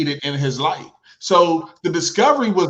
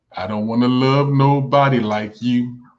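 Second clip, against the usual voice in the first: low, deliberately lowered voice; 6 semitones lower than usual. Retelling words once said to the other speaker, imitating own lowered voice. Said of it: "and I lowered my voice like this".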